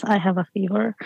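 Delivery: ordinary talk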